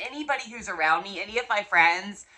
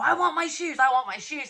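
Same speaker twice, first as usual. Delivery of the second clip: acted, demanding high-pitched yell; 6 semitones higher than usual. Retelling a woman at airport security wanting her shoes: imitating a woman yelling. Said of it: "I hear her starting to yell".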